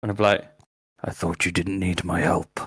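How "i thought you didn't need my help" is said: quiet hushed whisper. A player's character leans to an ally's ear after giving her a potion, whispering. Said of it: "I'll whisper in her ear".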